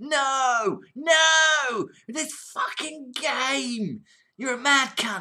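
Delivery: very high, very slow, dragged-out yelling, long no. Doing an impression of John raging at a game: impression of John yelling. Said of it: "I'll do an impression of John".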